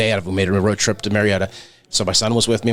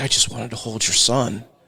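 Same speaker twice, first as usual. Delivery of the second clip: put-on crying voice. Retelling what Chandler said when he broke down, imitating Chandler crying. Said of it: "he actually broke down and cried. He's like".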